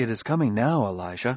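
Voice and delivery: ordinary talk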